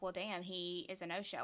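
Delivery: plain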